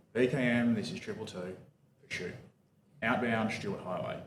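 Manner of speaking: unruffled, utterly calm police radio voice. Retelling a sergeant's radio call starting a pursuit: imitating a very calm radio voice. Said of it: "in just the calmest voice you've ever heard".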